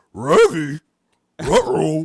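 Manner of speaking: loud, swooping dog-like R's in "Raggy" and "ruh-roh". Explaining how the cartoon dog traditionally talks: Scooby-Doo voice. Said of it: "Scooby-Doo traditionally, like, he can kind of talk, but it's like".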